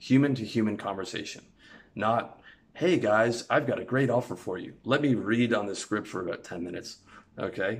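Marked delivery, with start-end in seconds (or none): 2.7-4.7 slick, patter-style salesman pitch voice. Contrasting human conversation with how a salesman talks: salesman voice. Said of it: "sounds like a salesman".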